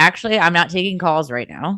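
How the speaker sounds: usual speaking voice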